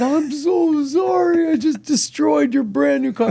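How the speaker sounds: high-pitched, aghast, mortified and horrified. Retelling apologizing to the owner of a scraped brand-new car; retelling a horrified apology. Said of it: "the look of horror on my face".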